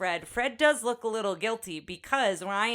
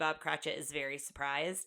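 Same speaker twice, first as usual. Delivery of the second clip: normal talking voice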